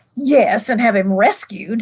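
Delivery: sneering, scornful, contemptuous tone. Narrating, the witch replies to the dwarf, scornful. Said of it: "said the witch scornfully".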